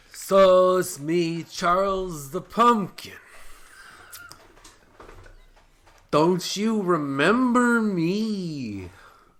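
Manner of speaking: very high, loud, slow, stretched character voice. Playing a pumpkin character asked to show his voice: Charles the Pumpkin voice. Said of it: "what does Charles the Pumpkin sound like?".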